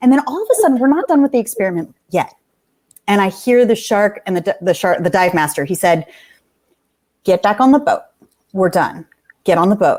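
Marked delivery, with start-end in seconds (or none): 7.2-10.0 controlled, flat, level, humorless delivery. Retelling the dive master's order to get back on the boat: imitating a controlled, humorless order. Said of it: "in such a controlled way with no fun in his voice".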